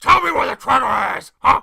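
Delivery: put-on gruff New York accent. Joking about an actor's silly cadence, Al Pacino impression. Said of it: "It's like fucking Al Pacino".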